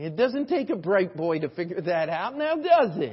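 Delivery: loud, swooping sarcasm slipping out. Answering a man who mocked Christians for taking the easy way, sarcastic remark. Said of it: "the sarcasm just sneaks out every once in a while".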